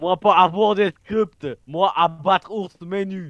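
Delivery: put-on Russian accent. Told to learn the script, a performer replies in a fake Russian accent. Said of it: "faux russe".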